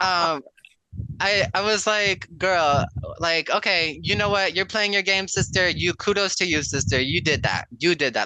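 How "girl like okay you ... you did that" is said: mock sour, begrudging, very bitter, sarcastic tone. Speaker retells what they told a player who broke their trust, retelling in a bitter tone. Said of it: "Like in a very like bitter tone".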